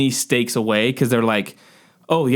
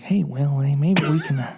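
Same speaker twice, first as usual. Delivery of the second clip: put-on whisper. Retelling a scene where the character is in front of the judge: whispering like Owen Wilson. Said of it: "he's, like, whispering".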